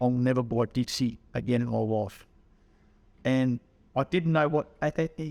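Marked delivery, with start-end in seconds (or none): none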